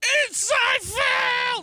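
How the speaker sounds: very high, very loud, slow scream.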